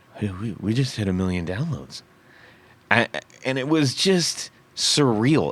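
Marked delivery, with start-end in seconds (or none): 0.2-2.0 tiny, small, low, quiet voice, barely there. Retelling what he said to people asking if he was okay, in a real small voice. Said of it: "I'm like in a real small voice".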